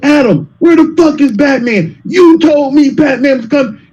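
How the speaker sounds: play-acted, full-on, high-pitched hollering yell. Retelling asking a friend about a missed batman rumor: imitating own past yelling. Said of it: "Wait till I got through yelling".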